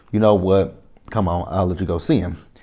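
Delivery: ordinary delivery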